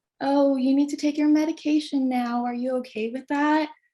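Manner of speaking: put-on calm, high, patronising, condescending voice. Imitating how others spoke to the speaker about taking medication, mock-condescending tone. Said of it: "talk in kind of like a condescending tone".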